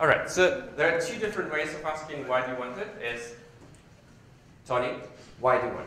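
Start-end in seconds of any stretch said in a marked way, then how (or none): 4.7-5.9 accusatory, louder. Demonstrating one way of asking someone why they want it, in an accusatory tone. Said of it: "that's probably the why which you're talking about".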